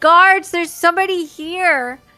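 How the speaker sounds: shrill, very loud, high-pitched shout. Narrating a scene, an acolyte turns and calls for guards: shouting for the guards. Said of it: "he just shouts".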